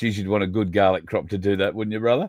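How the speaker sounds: normal talking voice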